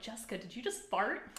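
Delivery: ordinary talk, nothing marked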